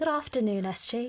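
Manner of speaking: upper-class English, posh received pronunciation. Greeting the host in the studio at coffee break: posh English accent. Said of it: "I was going for received pronunciation".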